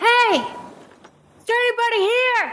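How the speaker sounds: loud, high-pitched calling out. Voicing a character calling out in a quiet village: yelling in character. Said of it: "Grinkeeper will yell".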